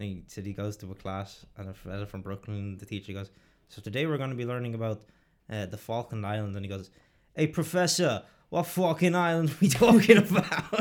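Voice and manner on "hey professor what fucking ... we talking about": put-on elderly Italian accent, loud and slow. Retelling a joke, a Brooklyn student answers the teacher in an old Italian guy's accent. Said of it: "like an old Italian guy's accent".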